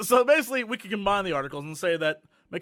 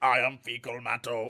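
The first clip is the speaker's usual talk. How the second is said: very deep, low robotic villain voice; 8 semitones lower, 5 dB quieter than usual. Playing a made-up evil robot villain who introduces itself: evil robot voice. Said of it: "he's an evil robot".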